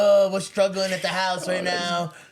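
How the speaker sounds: pleading, begging voice like a preacher. Imitating a Baptist priest in a Bentley asking for money: imitating a Baptist priest begging. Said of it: "trying to be like".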